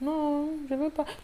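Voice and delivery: weak, lifeless, very soft, listless voice. Showing how someone invited to play answers, in a weak, listless tone. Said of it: "Tu dis avec un ton tellement, waouh, on dirait qu'on t'avait chicoté, on dirait que tu as passé cinq jours sans manger".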